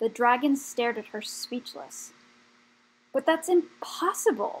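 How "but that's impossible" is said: high-pitched exclaiming voice. After a speechless stare at Rat, one of the dragons answers: exclaiming. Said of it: "one of them exclaimed at last".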